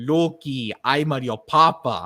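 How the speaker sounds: put-on Italian-accented villain voice. Imitating a dubbed film scene: Italian Darth Vader voice. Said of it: "Darth Vader sounded like an Italian Darth Vader".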